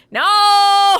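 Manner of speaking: high, loud, shocked and outraged.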